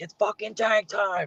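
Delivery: unhinged wild hype scream, very high. Guest shows how he says it in the ring, retelling a wild hype yell. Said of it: "and I go ape shit".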